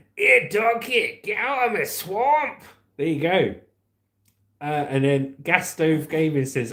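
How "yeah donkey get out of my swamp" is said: cartoon ogre voice, pitched up a little. Repeating a Shrek line another speaker suggested: Shrek voice. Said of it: "when Shrek's speaking to Donkey".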